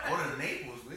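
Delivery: ordinary talk, nothing marked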